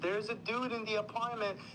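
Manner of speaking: acted-out high shrieking alarm. Retelling how a woman with a gun reacted: imitating someone screaming. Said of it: "And then she screams".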